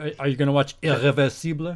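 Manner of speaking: put-on French pronunciation. Quoting Emily asking about a film: imitating Emily's French pronunciation. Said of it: "Emily says it proper".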